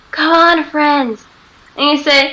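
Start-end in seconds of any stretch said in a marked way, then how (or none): 0.1-1.2 quick, hurried whisper. Breaking stealth to call to friends in character: quick whisper. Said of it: "I'm gonna whisper really quickly and say".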